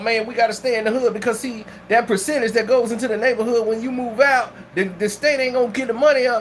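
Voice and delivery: ordinary talk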